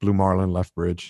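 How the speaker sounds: understated, low-key radio-call delivery. Retelling a call made into headphones: retelling saying it very quietly. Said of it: "I just said very quietly into the he-".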